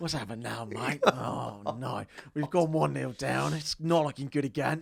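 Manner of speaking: put-on straining, groaning voice. Acting out the messages someone sends him during games, imitating a straining groan. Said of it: "you sound like you're struggling to push last night's dinner out".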